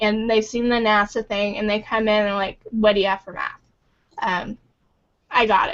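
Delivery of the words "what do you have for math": mock huffy, indignant put-on voice. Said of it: "all huffy".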